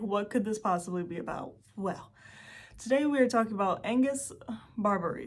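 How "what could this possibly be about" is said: ordinary talk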